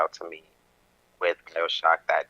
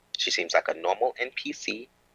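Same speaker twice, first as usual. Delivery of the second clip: normal talking voice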